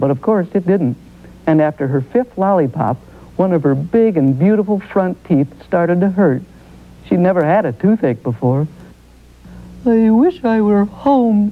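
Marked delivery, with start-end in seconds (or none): 9.9-11.5 slow, drawn-out, aching groan. Holding her cheek with a toothache after too many lollipops, she speaks, groaning. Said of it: "she groaned, holding her cheek".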